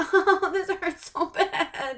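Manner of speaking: whimpering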